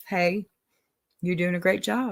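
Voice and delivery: normal talking voice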